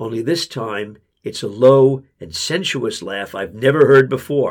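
ordinary delivery

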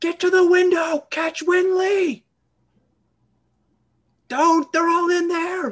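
very high pitched, very loud shouting. A player in a tabletop game speaking for Isolde, shouting as Isolde. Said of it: "I'm going to shout for Isolde".

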